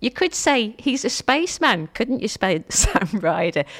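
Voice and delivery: giggly, laughter-filled speech. Speaker laughs at their own cheesy link, laughing while talking. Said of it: "Sorry, I'm still laughing".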